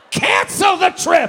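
high, loud, slow, harsh, stern shout.

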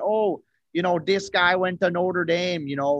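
put-on upper-Midwest Minnesota accent. Talking about a Notre Dame player, the speaker slips into a Minnesota-sounding accent. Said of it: "Why are you from Minnesota?".

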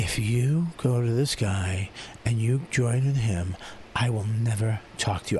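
barely audible, low, hushed half-whisper. Retelling how an actor delivered a line meant to be yelled in a scene, retelling a half-whisper. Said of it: "He literally whispers it".

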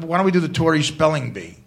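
ordinary talk

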